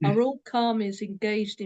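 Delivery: plain reading voice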